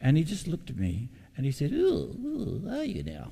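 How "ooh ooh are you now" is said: put-on high squeaky voice, higher. Retelling the Bible college principal's reply: imitating Doctor Knox's high squeaky voice. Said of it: "spoke in a really high, squeaky voice".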